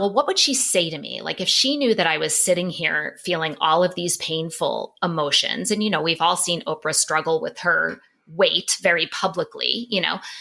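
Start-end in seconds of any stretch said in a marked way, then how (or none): none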